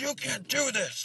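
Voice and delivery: put-on very high-pitched, furious angry old man yell. Retelling an old man scolding kids at the park: imitating an angry old man yelling. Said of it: "so pissed off and he was like".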